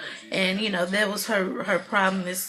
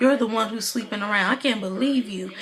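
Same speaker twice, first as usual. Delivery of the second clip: normal talking voice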